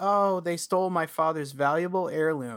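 put-on frightened, scared little boy voice. Retelling a character's ruse to find someone: imitating a scared little boy. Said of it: "a scared little boy".

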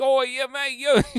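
put-on cockney British accent. Imitating how an actor really talks outside his gruff movie roles; Welsh Cockney British accent. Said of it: "really Welsh Cockney British accent".

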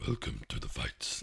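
very low, creaky, rough villain voice. Describing how a Twi'lek sounds, the speaker attempts the villain: deep Inspector Gadget villain voice. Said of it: "he's got that really deep welcome".

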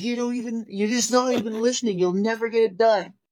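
shrill screaming, pitched very high. Retelling a quarrel with dad at a tire change: retelling own yell. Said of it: "So we're screaming".

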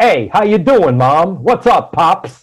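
loud, coarse streetwise voice. Acting out a woman greeting a man's parents and a waiter, coarse streetwise voice like Bowser. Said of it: "she leans hard into being extra streetwise".

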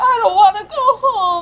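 play-acted, very high, effusive, gushing delight. Recalling a performer's happy speech at the end of a set, retelling a gushing speech. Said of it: "he was gushing in the way he said".

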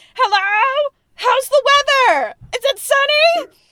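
put-on very high, very loud, shrill, drawn-out elderly scream. Commenting on a performer, the speaker imitates how old people scream on the telephone. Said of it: "how old people scream on the telephone".

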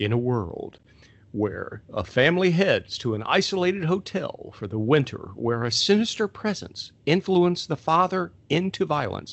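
dramatic, epic movie-trailer narrator voice. Reading an IMDb synopsis aloud, trying a movie-trailer voice. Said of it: "I'm going to try to do this in my best trailer voice".

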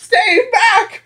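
very high-pitched voice, cracking. Imagining a showdown with John McAfee, the speaker does Bill Gates cracking his voice. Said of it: "him cracking his voice".

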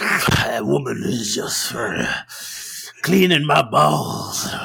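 put-on creepy old-man voice. Retelling what Jake Roberts said that made another wrestler furious, creepy Jake Roberts impression. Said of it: "it was like the creepiest sounding".

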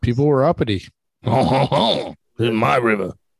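put-on French accent. Joking about the French Broad and English Broad rivers, French accent. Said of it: "that's the best French accent".

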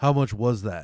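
mock irritated, angry and put out. Retelling how a customer asked the price: imitating an angry, inconvenienced customer. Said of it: "It was an angry, almost, like, inconvenienced".

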